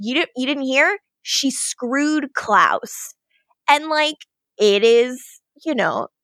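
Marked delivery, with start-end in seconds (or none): none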